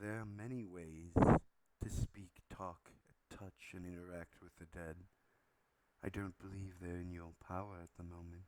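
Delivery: whispered-sounding voice. Voicing a character in the scene: whispery voice. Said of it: "like a whispery uh, voice".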